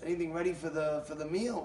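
ordinary talk

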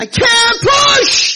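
very high, shrill, very loud screaming. Retelling a birth, the mother in labor pleading: imitating a mother screaming. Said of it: "And the mother is screaming".

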